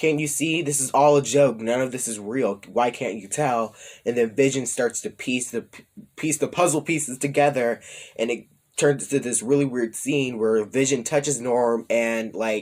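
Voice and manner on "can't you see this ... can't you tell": ordinary talk, nothing marked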